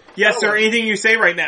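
normal talking voice

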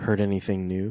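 low, hushed half-whisper under the breath. Narrator reads a customer's question to the pretzel seller, in a half-whisper. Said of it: "Frank said in a whisper".

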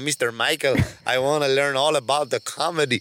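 put-on Norwegian accent. Imitating a little norwegian kid talking to mr. michael, in a put-on norwegian accent. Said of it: "I'm trying to do a Norwegian accent".

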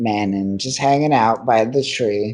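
usual speaking voice

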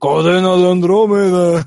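deep put-on adult male voice. Retelling how the actor voicing Andromeda sounds now: deep grown-up Andromeda voice. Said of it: "Todo ya grave el güey".

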